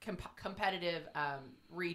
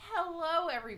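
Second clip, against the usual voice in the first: voice breaks, very high and cracking; 12 semitones higher than usual. A podcast host greeting listeners at the start of an episode, voice cracking. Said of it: "I don't know why my voice cracked".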